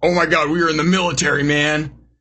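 earnest, canned video game voice acting. Mocking the voice acting in a game demo: imitating scripted game voice acting. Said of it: "that voice acting".

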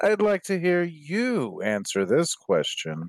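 smug, self-satisfied sing-song with "you" drawn out. Player reading the game rules aloud to the group, smug. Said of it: "do you have to say it like such a smug asshole?".

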